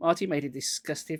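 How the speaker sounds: ordinary delivery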